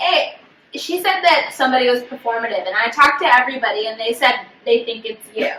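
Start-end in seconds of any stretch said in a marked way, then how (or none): none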